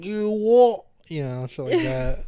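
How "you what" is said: put-on shrill, loud, high working-class British accent. Comparing british accents, imitating a lower-class british accent. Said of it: "the trash of the U K, like".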